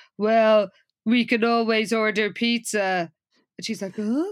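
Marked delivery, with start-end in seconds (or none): 0.2-3.1 mock-wooden, flat delivery. Recapping a scene where Sam answers Jessica about her roast chicken, in Sam's wooden delivery. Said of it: "he says in his most wooden tone".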